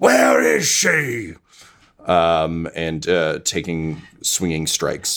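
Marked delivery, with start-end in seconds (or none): 0.0-1.3 high, angry, yelled vampire voice. Voicing a vampire fighting the bartender: vampire yelling. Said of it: "vampire keeps yelling".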